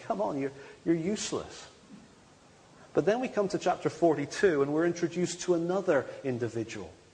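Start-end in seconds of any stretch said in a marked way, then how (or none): none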